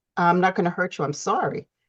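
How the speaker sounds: plain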